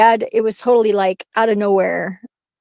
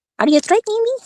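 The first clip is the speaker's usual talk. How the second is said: put-on cartoon teen voice, higher; 12 semitones higher than usual. Asked to say the line like Beavis: Beavis voice. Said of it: "can you say that like Beavis?".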